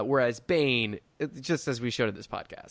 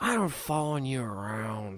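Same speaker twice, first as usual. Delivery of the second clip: put-on weird, drunk-sounding speech. Imitating an actor who talks weird as a human: imitating Tom Hardy talking weird. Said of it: "Tom Hardy just talks weird as a human".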